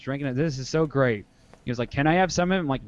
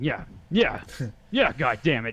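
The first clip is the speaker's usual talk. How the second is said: put-on worked-up, agitated voice. Retelling a pep talk with a worked-up friend: imitating Nick Michelson getting worked up. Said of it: "Great impression".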